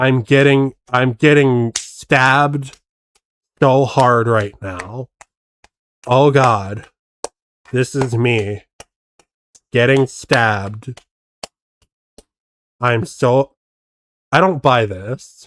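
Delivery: uninflected, flat mock pleading tone. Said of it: "there's no inflection to it".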